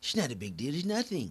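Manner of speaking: slightly high, dismissive voice. Reading a headline on a mortgage plan, then mimicking the president: Donald Trump impression. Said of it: "that's how he would say it".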